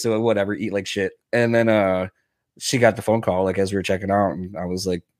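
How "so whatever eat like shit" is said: normal talking voice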